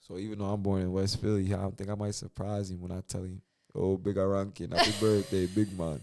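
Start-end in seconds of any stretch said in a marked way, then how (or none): 3.7-6.0 convincing, spot-on Jamaican accent. Showing how a birthday greeting will be said: jamaican accent. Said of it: "you just absolutely nailed that Jamaican accent".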